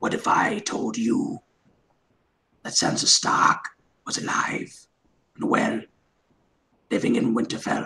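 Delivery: soft, breathy, close whisper. Asked by the others to do an impression: Littlefinger impression. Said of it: "You're Littlefinger".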